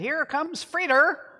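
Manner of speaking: put-on New England accent. Retelling how he greeted arrivals from the top step: Ernest Holmes New England accent. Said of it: "he would say in his New England accent".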